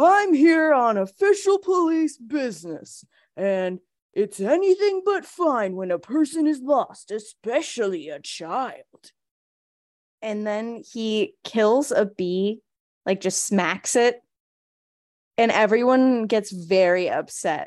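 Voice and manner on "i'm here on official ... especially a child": mock drunk man's speech. Retelling a scene where a character chugs mead: imitating a drunk man. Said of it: "he's kind of drunk immediately".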